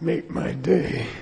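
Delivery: gruff, tough-guy voice, hard delivery. Retelling how a man he knew liked to talk, doing a Dirty Harry voice. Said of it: "he liked Dirty Harry, so I think he liked to talk like that".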